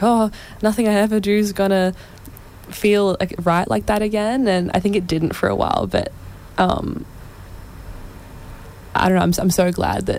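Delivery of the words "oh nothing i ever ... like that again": normal talking voice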